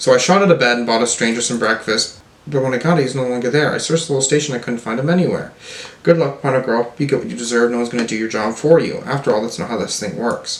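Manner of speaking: ordinary talk, nothing marked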